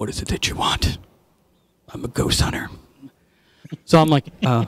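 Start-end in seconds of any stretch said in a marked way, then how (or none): 0.0-2.7 put-on serious voice, lower and quieter. Retelling a nervous phone call to a ghost hunter, mock totally serious Mr. Zaffis. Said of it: "totally serious".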